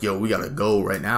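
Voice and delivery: normal talking voice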